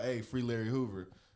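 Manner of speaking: ordinary delivery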